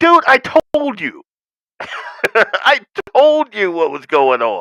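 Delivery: voice put on as a dog. Narrating a video clip, giving the dog words: voicing the dog. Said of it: "Dog's like".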